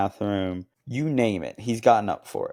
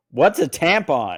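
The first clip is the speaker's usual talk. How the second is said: really loud, high-pitched, blurted-out delivery; 6 semitones higher, 6 dB louder than usual. Retelling what a returning man asked while a comedian talked, retelling a loud question. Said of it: "like really loud".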